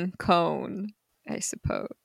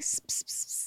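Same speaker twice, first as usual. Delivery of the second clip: soft hissed whispered gibberish. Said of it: "That's what he's whispering".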